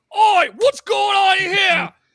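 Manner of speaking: shrill, very high, booming bandit-captain yell. Voicing a bandit captain bursting through a door: bandit captain shouting. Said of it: "six of his cronies burst through the door and go".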